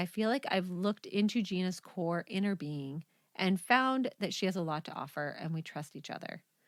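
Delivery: ordinary delivery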